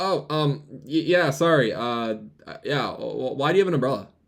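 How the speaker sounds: mock, nervous, flustered stammer. Retelling a coworker's nervous answer: imitating a nervous stammer. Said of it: "And he goes".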